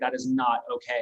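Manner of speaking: plain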